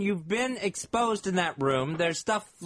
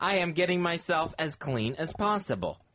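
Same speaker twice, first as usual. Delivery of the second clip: usual speaking voice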